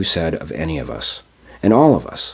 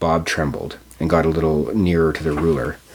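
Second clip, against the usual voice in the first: ordinary delivery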